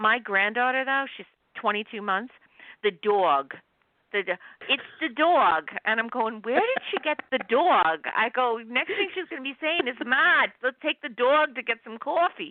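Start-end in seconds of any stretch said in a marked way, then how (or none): 10.0-12.5 put-on thick, heavy, laid-on New York accent. Grandfather imagining his toddler granddaughter talking to him, in a heavy New York accent. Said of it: "heavy New York accents".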